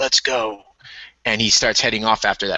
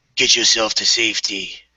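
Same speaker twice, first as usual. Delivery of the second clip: stern, firm voice. In a tabletop game, Soul Taker brushes off a frightened woman's hands; stern voice. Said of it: "in a stern voice says".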